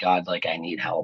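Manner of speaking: acted-out tearful, weepy voice. Retelling praying on a cell floor: retelling a tearful prayer. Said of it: "tears in my eyes".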